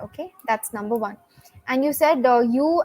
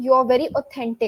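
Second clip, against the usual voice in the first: usual speaking voice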